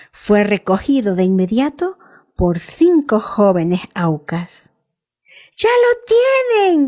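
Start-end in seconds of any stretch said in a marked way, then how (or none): 5.6-6.9 very high joyful cry, lo stretched. Jim, watching from the circling plane, exclaims jubilantly. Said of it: "exclamó Jim jubiloso".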